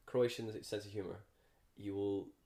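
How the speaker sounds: usual speaking voice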